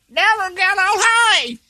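high, shouted, belted scream like an aging rocker.

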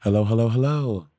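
inviting, engaging showbiz drag-host voice. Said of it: "Do I sound like [name] to you?".

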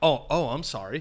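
suddenly clear-headed, sober, apologetic tone. Retelling a drunk friend's instant apology: imitating a suddenly sober apology. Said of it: "the most sober person in the room".

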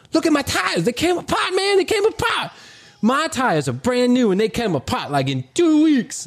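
put-on slangy kid voice. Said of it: "And he's like".

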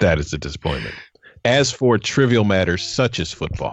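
very deep, grave, patronizing, condescending voice. Speaker announces a deliberate switch into a serious, condescending tone. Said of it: "I'm going to talk to you with a more serious, condescending tone".

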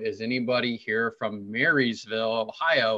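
ordinary delivery

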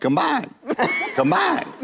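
very high, swooping, sing-song Texas twang. Imitating how she kept saying the word; texas twang. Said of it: "she is like a Texas twang".

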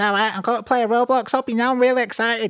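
put-on tiny kid voice, very high, northern English accent. Imitate a little kid from North England who played Roblox, in an Ethan Gamer little kid voice. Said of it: "He spoke like this".

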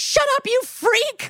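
mock, very high, shrieking full meltdown scream. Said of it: "a full meltdown screaming at Jennifer".

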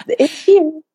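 real, full-on high little whisper. Retelling how they announced their product after webinars: imitating own whisper. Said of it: "legit whispering".

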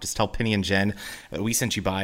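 ordinary delivery

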